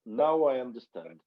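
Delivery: thick put-on Georgian accent. Retelling what a man said to him after a concert, in a thick Georgian accent. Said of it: "he spoke this very thick Georgian accent".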